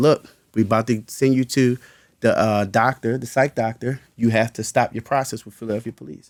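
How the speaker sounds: usual speaking voice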